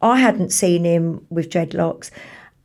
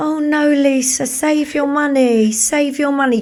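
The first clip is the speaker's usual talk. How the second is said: put-on high, sweet, cutesy little voice; 5 semitones higher than usual. Retelling to a friend how he told her to save her money: imitating a cute little voice. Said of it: "trying to be all cute with that little voice".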